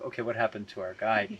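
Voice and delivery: normal talking voice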